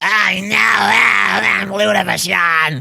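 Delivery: put-on slow, high, creaky, rough old woman voice, drawn out. Doing an impression of a wrestler's voice for podcast listeners: Luna Vachon voice. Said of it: "I'm gonna do an impression of her voice".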